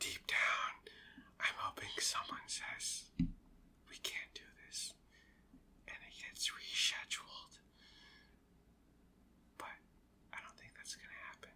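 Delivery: hushed, confiding, barely voiced whisper. Hoping someone won't overhear this part, whispering. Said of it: "I'm whispering because I hope Liz Fisher doesn't hear".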